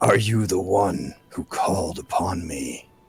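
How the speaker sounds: low, deep creature voice. Game master voices a summoned creature speaking to the players, deep creature voice. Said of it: "in a deep voice that uh, you hear in your mind".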